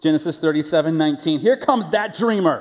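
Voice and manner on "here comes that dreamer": pitched-up, sarcastic, hate-filled derisive jeer. Quoting the brothers sneering at Joseph: imitating sarcastic, hateful brothers. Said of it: "you can hear the sarcasm and the cynicism and the hatred in their voice".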